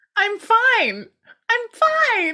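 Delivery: very high, sing-song, swooping voice. Retelling his reply when Janet checks on him: high-pitched voice. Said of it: "I don't know why my voice is so high".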